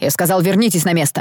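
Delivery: ordinary delivery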